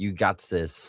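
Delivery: put-on, imitated German accent. The speaker recalls reading a line aloud to their co-host: german accent. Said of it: "I read it in like a German voice".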